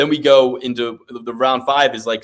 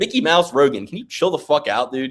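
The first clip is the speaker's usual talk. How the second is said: normal talking voice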